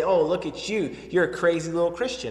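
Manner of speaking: plain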